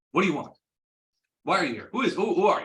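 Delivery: very loud, high, irritated, annoyed tone. A game narrator voices a woman questioning visitors at her door; irritated. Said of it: "And she looks irritated".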